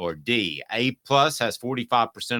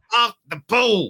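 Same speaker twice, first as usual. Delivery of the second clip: very high-pitched, loud put-on comic voice; 11 semitones higher, 6 dB louder than usual. A quick impression the speaker calls their best attempt: Chris Rock voice. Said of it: "That's my Chris Rock imitation".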